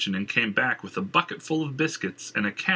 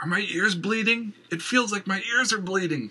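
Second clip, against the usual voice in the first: high-pitched moan, sounding badly hurt; 9 semitones higher than usual. Rolling on the floor, his eyes watering, he moans in pain. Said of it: "he moaned".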